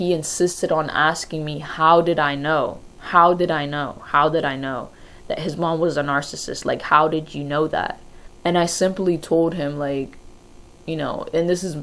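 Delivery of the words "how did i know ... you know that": usual speaking voice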